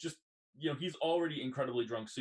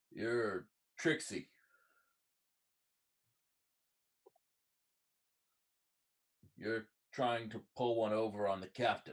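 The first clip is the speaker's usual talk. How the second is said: boozy, slurred pirate voice; 3 semitones lower than usual. Voicing a pirate who accosts the players outside: drunk pirate voice. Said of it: "clearly drunk".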